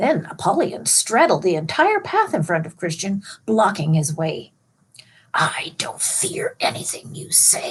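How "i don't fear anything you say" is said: slow, whispered hissing words. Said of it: "he hissed".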